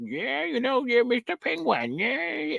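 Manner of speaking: put-on young-sounding, high, goofy babbling impression.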